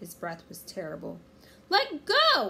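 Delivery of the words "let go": shrill, very high, very loud yell. Annie shouts into Captain Bones's face. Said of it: "Annie shouted into his face".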